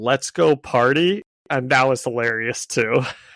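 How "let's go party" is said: mock puzzled, confused, unsure-sounding delivery. Retelling a movie scene before a battle: imitating a confused delivery. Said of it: "the next one kinda confusedly goes".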